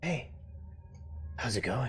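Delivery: soft, hushed half-whisper. A voice from the neighboring cell greets a new prisoner, half-whispering. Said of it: "You hear a whispering voice from the cell next to you".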